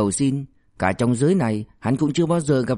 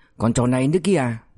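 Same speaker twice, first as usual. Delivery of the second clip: usual speaking voice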